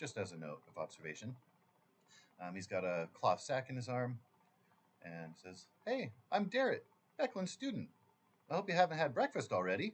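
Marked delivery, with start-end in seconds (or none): 5.8-9.9 wide-eyed, eager, upbeat, very high and loud. Game master voices Beckland's student greeting the players, wide-eyed and upbeat. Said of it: "Very wide-eyed, upbeat".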